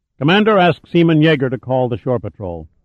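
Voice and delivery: ordinary delivery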